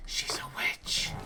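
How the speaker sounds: slow, hushed, secretive whisper.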